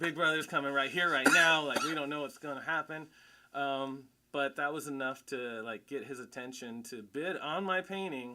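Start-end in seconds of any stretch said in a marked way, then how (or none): 0.0-3.1 panicked, higher and louder. Retelling a reaction on learning who heard the story: retelling own panic. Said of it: "I was panicking".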